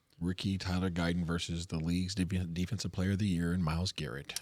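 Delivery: hushed close voice. On a football picks podcast, a co-host gives his take, almost whispering. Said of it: "You're like whispering into the microphone".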